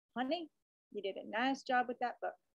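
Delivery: put-on elderly American Western accent. Quoting what an 89-year-old caller said on the phone: Jackie Gorham's Western accent. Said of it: "a good Western accent there".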